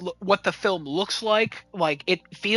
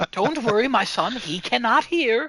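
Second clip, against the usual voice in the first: slow, terribly proper, monstrous tone; 3 semitones higher than usual. Quoting a movie line by Daniel: imitating Daniel, proper yet monstrous. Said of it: "he's so proper, yet a monster".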